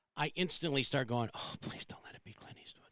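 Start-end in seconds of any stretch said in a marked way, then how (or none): 1.3-2.9 breathy, worried, acted-out whispered delivery. Retelling own thoughts when hearing a death: mock worried plea. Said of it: "I get worried".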